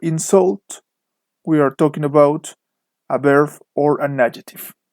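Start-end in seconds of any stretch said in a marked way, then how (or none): 0.0-0.8 insult, stress on second syllable -sult. Explaining stress in verbs and adjectives: stress on second syllable of insult. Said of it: "the stress is on the second syllable. So if you hear something like protest or insult".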